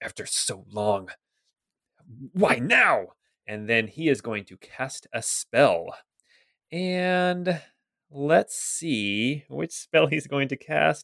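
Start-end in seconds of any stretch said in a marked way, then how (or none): 0.0-3.1 low mutter under the breath, barely aloud. Narrator voices a shaken character speaking to himself, muttering under his breath. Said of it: "you hear him mutter under his breath".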